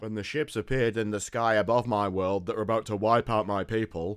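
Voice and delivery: emotionless, level delivery. Retelling a character's story as it was delivered, in a flat monotone. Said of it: "as you can tell from my voice".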